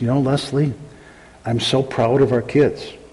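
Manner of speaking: quiet, low-toned talk. Retelling a father talking to his wife with the kids in back; low tones. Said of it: "he'd talk to his wife in low tones".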